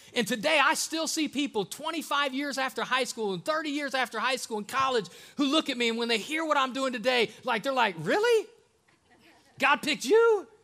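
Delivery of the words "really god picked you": put-on high-pitched voice, higher and louder. Retelling how old classmates react to the news: imitating people in a high voice. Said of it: "I don't know why I'm talking so high".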